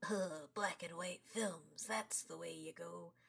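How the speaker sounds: put-on low, hushed old-movie critic voice. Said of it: "I don't know why I did that voice".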